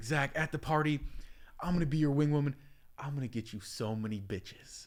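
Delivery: put-on excited voice. Retelling what his buddy's girlfriend said in the car, imitating her excitement. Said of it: "she gets excited".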